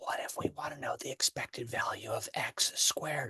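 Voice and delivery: soft, hushed, breathy whisper. Explaining an expected-value problem, suddenly whispering. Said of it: "I don't know why I'm whispering".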